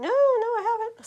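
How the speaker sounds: very high, slow cartoonish voice, "I" stretched out. Acting out a woman's reply to a coffee invite: Mickey Mouse-like voice. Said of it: "It sounds like Mickey Mouse".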